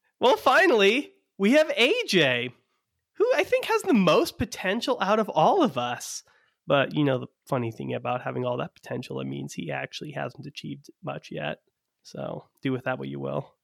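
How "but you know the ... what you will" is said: quick, soft half-whisper, barely voiced and fast. Introducing the last member of the group, an aside into the microphone, half-whispering. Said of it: "you're whispering into the microphone over there".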